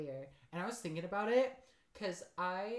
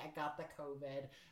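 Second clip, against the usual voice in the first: put-on low, soft Midwestern mom accent; 4 semitones lower, 6 dB quieter than usual. Retelling her call with a friend's mom, midwestern mom voice. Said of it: "she did a very good like midwestern mom voice".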